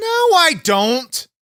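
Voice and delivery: very high, angry voice. Denying to the other speaker a claim of getting angry a lot, with an angry denial. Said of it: "Seem kind of angry right now".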